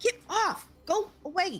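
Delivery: very high, shrill yelling. A player voicing Willow shooing away a moth, Willow yelling. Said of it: "Willow is yelling at some sort of".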